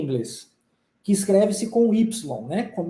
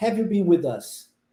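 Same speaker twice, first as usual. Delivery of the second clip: pitch steps down through "with us", falling on "been"; 2 semitones lower than usual. Teaching English question intonation to listeners, falling pitch on 'have you been with us'. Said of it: "E depois a gente desce".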